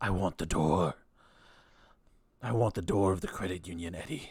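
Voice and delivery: low, half-whispering voice. A voice in Eddie's head speaks to him: half-whispering voice in head. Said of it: "you hear a voice whisper in your head".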